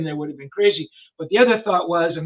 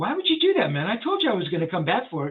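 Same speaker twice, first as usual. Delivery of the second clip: put-on mildly angry, heated, swooping, annoyed tone; 3 dB quieter than usual. Retelling own words to someone who gave the dog away: retelling own angry words. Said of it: "And I got a little angry".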